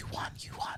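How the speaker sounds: very soft, barely voiced whisper under the breath. Retelling how the fiance came upstairs with the news: imitating a whisper.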